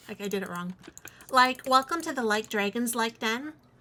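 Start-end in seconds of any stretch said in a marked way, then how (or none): 1.7-3.5 put-on Valley Girl voice, speech full of likes. Jokingly opening an ASMR video welcoming viewers: Valley Girl voice. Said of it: "Valley Girl?".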